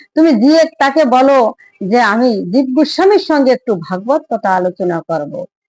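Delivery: ordinary delivery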